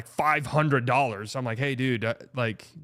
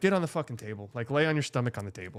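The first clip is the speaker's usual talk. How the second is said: put-on annoyed voice, quieter; 4 dB quieter than usual. Retelling what she said at the urgent care place: imitating someone annoyed.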